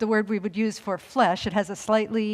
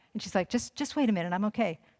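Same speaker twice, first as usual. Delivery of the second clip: plain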